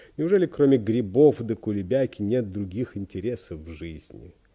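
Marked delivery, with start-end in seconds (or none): none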